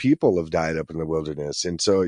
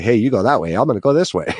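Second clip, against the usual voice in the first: put-on old-timey newsboy voice, raised and high-pitched; 5 semitones higher, 7 dB louder than usual. Describing splitting up in the forest, the speaker acts it out in a newsie voice. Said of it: "Why do you sound like a newsie just then?".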